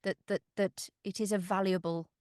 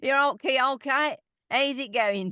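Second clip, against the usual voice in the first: put-on accent from Northampton; 6 semitones higher, 8 dB louder than usual. Imitating how people spoke back home: old Northampton accent. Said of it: "more of the old, old Northampton".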